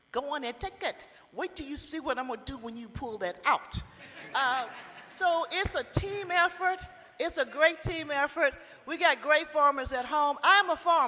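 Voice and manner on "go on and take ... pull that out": put-on speaking with a Trinidadian accent. Speaker retells a woman at the farmer's market answering customers: Trinidadian accent. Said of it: "in this voice that she has from Trinidad".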